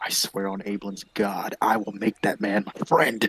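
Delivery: unhurried, slow, spoken privately to oneself. Vowing to himself after being rebuffed: half-whispering to himself. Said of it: "I whisper to myself".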